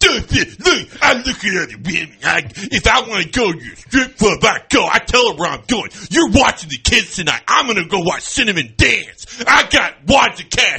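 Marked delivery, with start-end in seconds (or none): 1.0-10.8 mock, put-on macho tough-guy voice with bravado. Continuing the improvised bit, put-on macho tough-guy voice. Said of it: "That's what Jack Strebel would do".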